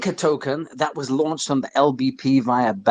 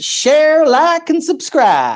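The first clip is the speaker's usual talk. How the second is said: put-on very high, sing-song, swooping Kentucky accent; 14 semitones higher, 6 dB louder than usual. Co-host wrapping up a community call, in his best Kentucky accent. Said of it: "in my best Kentucky accent".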